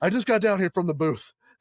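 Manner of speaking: out of breath, winded. Retelling a wrestling match, acting out Bobby Heenan running in from the booth: retelling Bobby Heenan out of breath. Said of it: "And Heenan's out of breath".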